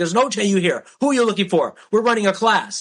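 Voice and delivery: mock yell, high and scary. Retelling how someone yelled to scare others, retelling a yell. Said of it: "he like kind of yelled at them to scare them".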